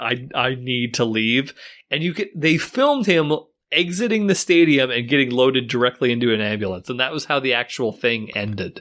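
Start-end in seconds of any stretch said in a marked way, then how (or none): 0.0-1.5 mock quiet mutter under the breath, lower and slower. Retelling what a man said as he was brought back into the match, muttering under breath. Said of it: "Very quietly under his breath".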